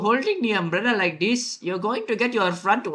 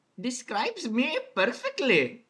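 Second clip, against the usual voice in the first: put-on Indian-accented English, sounds held on; 2 semitones higher, 4 dB quieter than usual. Reacting in shock to a question asked in an anime: put-on Indian accent. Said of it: "I'm still going to keep this accent".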